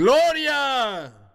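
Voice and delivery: high, loud, triumphant yell.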